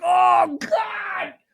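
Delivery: play-acted very high, wailing sob-scream. Retelling how a woman reacted at a movie: imitating a crying, screaming woman. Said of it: "She's, like, crying, screaming".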